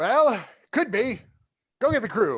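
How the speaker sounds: small, high, gnomish character voice. Voicing a little gnomish figure found aboard the ship, in a little gnome character voice. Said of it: "this little gnomish figure".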